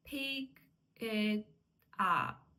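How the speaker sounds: pick, it, up said as separate words with pauses.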